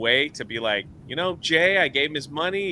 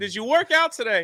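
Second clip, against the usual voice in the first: pitched-up, casual buddy-like voice; 8 semitones higher than usual. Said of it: "he's just like".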